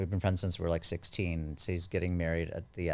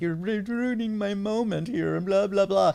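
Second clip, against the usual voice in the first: mock tearful crying, complaining tone; 13 semitones higher, 5 dB louder than usual. Retelling her husband at the time's complaint: imitating someone crying. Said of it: "and he starts crying".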